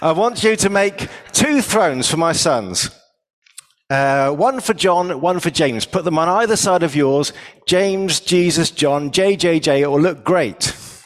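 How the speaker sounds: put-on slight Australian accent. Retelling the mother of james and john asking jesus for thrones: a bit of australian accent. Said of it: "with a bit of Australian maybe".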